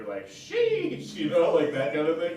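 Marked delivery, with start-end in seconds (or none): 0.3-1.1 loud "sheesh" exclaimed very high-pitched. Explaining how the word is typically said: a loud sheesh. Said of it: "it's typically you say it like loud, right?".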